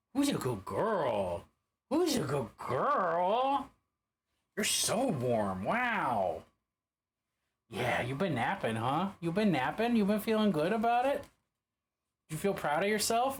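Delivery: patronizing, talking-down pet-owner voice. Greeting a warm dog that has been napping, talking down to a dog. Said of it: "I'm talking down to you like this".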